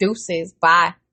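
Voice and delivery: ordinary delivery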